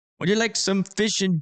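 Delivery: clumsy put-on German accent, high pitch. Thanking a donor for a donation, trying out a German accent: bad German accent. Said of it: "If I say if I try to do any type of German accent".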